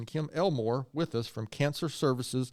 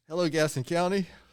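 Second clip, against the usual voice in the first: spoken through laughter, pitched up; 5 semitones higher, 3 dB louder than usual. Opening a podcast with a greeting, laughing while talking. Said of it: "I'm laughing already this morning".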